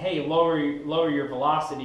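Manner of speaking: normal talking voice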